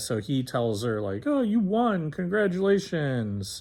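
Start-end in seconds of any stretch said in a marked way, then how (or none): 1.3-3.6 snooty, pitched-up rich-guy voice. Retelling what a man told a woman, imitating a snooty rich guy. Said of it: "sounded like a snooty rich guy".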